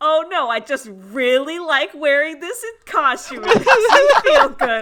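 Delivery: shrill, very loud exasperated shout, climbing in pitch. Retelling someone's answer about wearing a costume, retelling a frustrated yell. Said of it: "And Adam yells, like, frustratedly".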